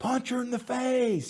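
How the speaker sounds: screaming, very high and shrill. Retelling shouting from the sidelines at a daughter's lacrosse game: imitating own screaming. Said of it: "I'm screaming".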